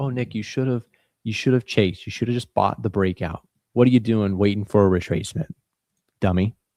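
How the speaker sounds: put-on sarcastic scolding tone. Speaker acts out the voice in their head after a missed trade: sarcastic mock self-scolding. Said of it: "I'm being sarcastic".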